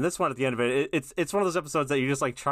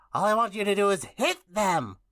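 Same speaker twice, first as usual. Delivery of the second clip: pitched-up, spooky put-on cartoon ghoul voice; 8 semitones higher than usual. Taking Ice King's dialogue in the group read: Ice King voice. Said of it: "I'm also going to do Ice King".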